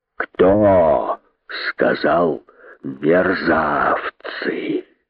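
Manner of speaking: low, terrible, menacing hiss. Narrator reads the great python questioning his followers, menacing hiss. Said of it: "Страшным голосом прошипел".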